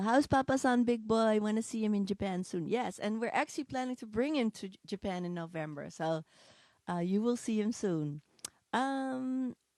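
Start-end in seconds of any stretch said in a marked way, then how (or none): none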